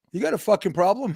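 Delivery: New York Brooklyn accent. Acting out someone in Brooklyn rolling the windows down: Andrew Dice Clay Brooklyn accent. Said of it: "I'll do an Andrew Dice Clay impression of someone in Brooklyn".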